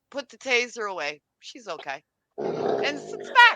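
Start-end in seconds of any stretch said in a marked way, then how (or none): 0.1-2.0 very soft, hushed, calm, even, normal tone. Retelling what she said as she leaned over, mimicking calm, normal voice. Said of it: "in the most calmest, normal voice and says".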